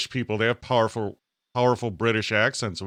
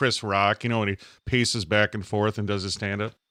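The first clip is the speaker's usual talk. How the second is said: ordinary talk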